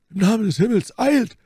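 very high, shrill, loud crying out. Narrator voicing a companion as the poisoned woman convulses, crying out. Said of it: "rief Porthos".

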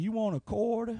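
put-on gentle, soft old grandpa voice. Speaker describes a man who looks like a good grandfather, imitating a grandfatherly man. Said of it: "the guy that when he sees a kid come by".

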